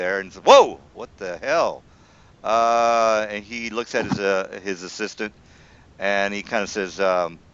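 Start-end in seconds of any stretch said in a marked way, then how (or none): 0.4-1.9 very loud, startled, taken-aback exclamation. Voicing a constable startled by the ugliness of an orc: taken aback. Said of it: "kinda taken aback by the ugliness of the orc".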